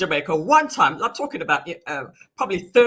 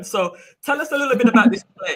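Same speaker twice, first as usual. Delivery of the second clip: usual speaking voice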